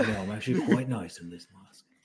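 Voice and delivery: British accent impression. Recounting a scene, the speaker gives a masked character's reply in a British accent impression. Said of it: "That was a very good British act".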